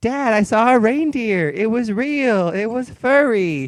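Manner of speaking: put-on high, slow, pleading little girl voice.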